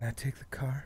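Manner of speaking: very quiet, low, hushed whisper. Speaker retells what their wife whispered in their ear: retelling a whisper. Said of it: "she whispers in my ear".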